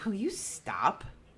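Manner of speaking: mock, dripping, super-heavy sarcastic voice. Telling a haunting story, the speaker acts out a voice interrupting a prayer: mock super-sarcastic voice. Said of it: "Like super sarcastic".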